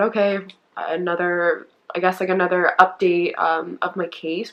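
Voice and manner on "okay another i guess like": usual speaking voice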